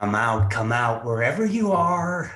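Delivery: low, slow, menacing taunting voice.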